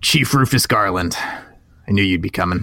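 put-on older man character voice. Voicing the older police chief greeting the group: voicing an older police chief. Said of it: "large, older man there at the front".

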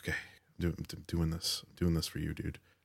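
muttering under breath. Voicing a character hooking onto a zip line: muttering under his breath. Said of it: "he mutters to himself, like, under his breath".

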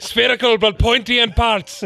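Scottish-accented voice.

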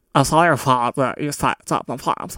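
mock dumb, stupid-person voice. Trying out the voice used for impersonating anybody stupid, in a put-on stupid-person voice. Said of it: "the voice for anybody stupid that I impersonate".

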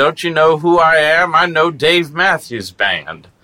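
put-on angry yell. Describing the main guy yelling at the bar staff, imitating a man yelling at staff. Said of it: "starts yelling at the bar staff".

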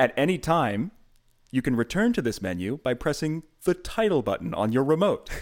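menu narrator voice. Imitating a DVD main menu announcing the options: imitating a DVD menu announcer. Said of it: "I think I did a pretty faithful job".

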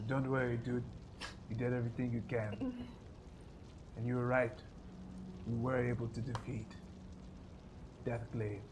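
put-on whispered, hushed, breathy Nigerian accent. Retelling EK reassuring him after his apology, EK's Nigerian accent. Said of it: "He also is speaking in a Nigerian accent".

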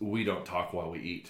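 mock dry deadpan, low and quiet. Speaker retells what a dad said at the dinner table, imitating a deadpan remark. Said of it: "his dad looks at me like deadpan and goes".

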